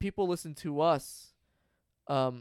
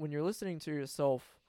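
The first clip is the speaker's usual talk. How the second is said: ordinary talk, nothing marked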